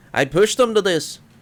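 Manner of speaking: breathless faked Irish accent. A man approaches in a miserable state, speaking in a thick irish accent, breathless. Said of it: "speaks breathlessly in a thick Irish accent".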